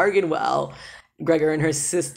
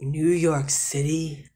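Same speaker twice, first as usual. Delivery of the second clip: put-on weighty, age-old, grand, ponderous, important-sounding voice. Voicing a character asking if someone is from New York City: ancient, ponderous, important Vicus voice. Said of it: "most ancient and, like, ponderous, important voice".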